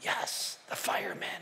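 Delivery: put-on whisper. Retelling a child answering the phone: imitating a whisper. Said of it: "the kid's whispering all the way through".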